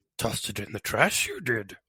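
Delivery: put-on voice, pitched high and swooping around. Asked for a Yoda reading of a line: Yoda voice reading a line. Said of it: "Give us your best Yoda reading of that line".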